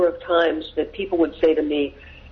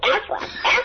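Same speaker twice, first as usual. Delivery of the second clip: strongly nasal, very nasal tone. Retell how an art director and his partner came in at the agency, in a very nasal tone. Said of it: "in a very nasal tone".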